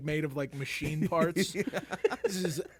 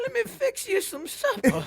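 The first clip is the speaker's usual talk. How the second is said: put-on out-of-breath grandmother voice, higher and louder; 5 dB louder than usual. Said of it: "like an out-of-breath grandmother now".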